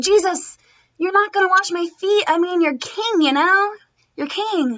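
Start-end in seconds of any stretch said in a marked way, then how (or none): none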